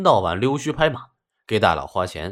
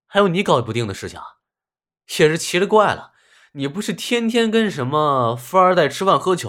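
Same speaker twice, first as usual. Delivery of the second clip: mocking, teasing banter with voice lifted higher; 6 semitones higher, 3 dB louder than usual. Narrator voicing a student on his bed answering his dormmate, teasing. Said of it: "调侃道".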